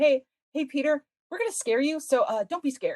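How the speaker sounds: mock sugary, really sweet, friendly, kind-hearted voice. Retelling a sitcom scene, warning Peter about a scare: imitating Mickey saying it sweetly. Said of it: "Mickey says really sweetly".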